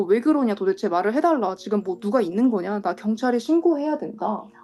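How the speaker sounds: normal talking voice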